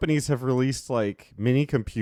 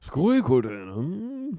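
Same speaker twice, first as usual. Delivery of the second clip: mock Japanese accent; 2 semitones higher than usual. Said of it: "the most racist Japanese voice".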